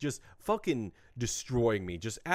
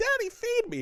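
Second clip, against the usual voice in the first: put-on shrill, very high child's shriek; 4 dB louder than usual. Speaker recounting a long day, imitating his kids screaming behind him. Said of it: "Kids are screaming behind me like".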